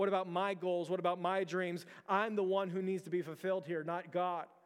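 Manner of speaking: ordinary talk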